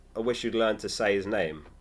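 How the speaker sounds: ordinary delivery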